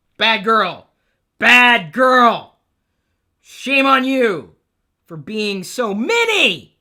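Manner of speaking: very loud, high, booming yell with mini drawn out. Joking that it is a very, very bad girl, yelling. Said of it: "sorry, I didn't mean to yell".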